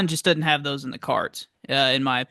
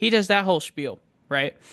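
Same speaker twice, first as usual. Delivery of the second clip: plain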